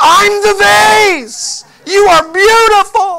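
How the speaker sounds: high, loud, slow awestruck cry, mesmerized and overwhelmed.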